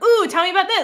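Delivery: lively, suddenly interested tone. Imitating a character on the phone with Meemaw: imitating a perked-up voice. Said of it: "she perks up and you hear it in her voice".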